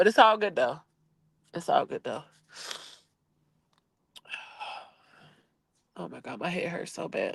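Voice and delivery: tearful speech, talking through crying. Talking to a listener who says it's hard right now, crying while talking. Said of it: "you're crying and it's hard right now".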